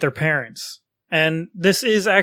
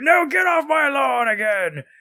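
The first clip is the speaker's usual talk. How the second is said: put-on cranky, grumpy old man voice, pitched up; 8 semitones higher than usual. A speaker jokes about becoming an old person, grumpy old man voice. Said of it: "I'm going to be the greatest old person".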